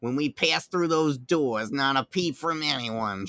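put-on Queens New York accent. Retelling what she said in the mines, in Janine Melnitz Queens accent. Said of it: "Janine Melnitz with her Sid in her Queen's accent".

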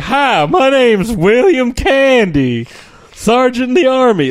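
put-on high, loud, slow, ridiculous Southern accent. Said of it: "he's got this ridiculous Southern accent".

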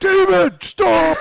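put-on police officer yell. Retelling a cop below yelling at someone: imitating a cop yelling. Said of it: "you hear the cop yelling".

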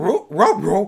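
mumbled cartoon dog voice, hardly words. Complaining the cartoon dog now sounds too articulate, doing a Scooby-Doo dog voice. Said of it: "a rarely coherent dog voice".

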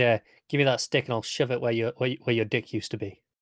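acted aggressive outburst. Retelling a character's reply when offered the talking stick: imitating an aggressive outburst. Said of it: "he gets very aggressive".

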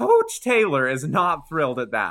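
voice cracking. Commenting on the coach's reaction: voice cracking. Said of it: "That was a nice crack in your voice".

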